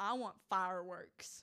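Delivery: loud put-on country accent from Texas. Retelling to a podcast co-host what a woman said, in a Texas country accent. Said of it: "We're not starting the country accent on the podcast".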